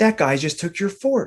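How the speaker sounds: play-acted indignant, worked-up, high and angry. Retelling what an angry friend's friend said: imitating someone angry. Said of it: "he gets really, really angry. He goes".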